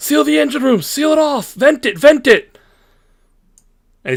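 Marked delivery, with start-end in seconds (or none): 0.0-2.6 shrill, very high-pitched shouting. Game master voices a character yelling to Darth, yelling orders. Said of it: "He starts yelling".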